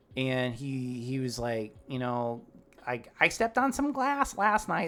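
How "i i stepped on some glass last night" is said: put-on voice pushed way up high. Retelling a guest's message about stepping on glass: imitating how the guest sounds. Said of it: "This is exactly how he sounds".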